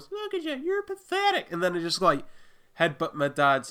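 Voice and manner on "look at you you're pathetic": put-on tiny, very high six-year-old child voice. Retelling repeating a villain's taunt as a child, in a little six-year-old voice. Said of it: "in my little 6-year-old voice".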